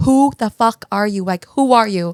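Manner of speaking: loud acted scream. Retelling how the dad, knife in hand, confronted the sister: imitating someone screaming. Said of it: "screaming at her".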